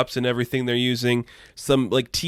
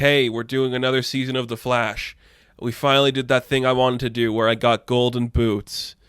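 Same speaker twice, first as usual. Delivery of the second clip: mock unenthusiastic, flat, bored drone. Recounting a project, doing Grant Gustin sounding mock-bored. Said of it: "sounding super bored and doesn't want to be there".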